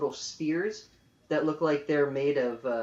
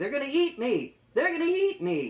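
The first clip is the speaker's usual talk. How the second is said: very high, shrill, frantic panicked scream, swooping; 11 semitones higher than usual. A man lying hurt after a fall screams to those nearby. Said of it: "And he's screaming".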